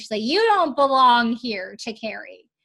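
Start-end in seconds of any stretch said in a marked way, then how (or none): 0.2-1.8 put-on loud, slurred, sloppy drunk speech. Retelling what Ripsey said to Carrie on the stairs, imitating drunken slurring. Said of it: "says drunkenly, slurringly".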